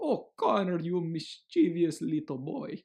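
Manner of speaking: terrible put-on Russian accent. Quoting what his Russian doctor called him: terrible Russian accent. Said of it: "that's like a terrible accent".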